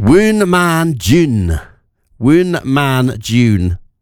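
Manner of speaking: voice with a Scottish-sounding accent. Quiz host sounding out an old English word as a clue, Scottish-sounding accent. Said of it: "I'm going to sound like Scottish here".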